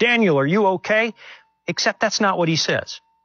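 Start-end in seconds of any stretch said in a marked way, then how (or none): 0.0-1.1 yelling out. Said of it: "he yells out".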